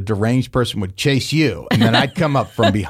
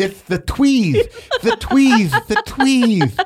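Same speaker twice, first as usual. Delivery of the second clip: lisping voice, high and swooping in pitch; 13 semitones higher than usual. Speaker retells what the co-host said with a mouth guard in, Sylvester the cat voice. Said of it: "talking like Sylvester the cat".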